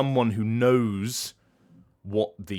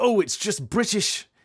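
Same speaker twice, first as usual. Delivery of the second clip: high, annoyed, mock dismissive whine. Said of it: "the annoying thing of people going".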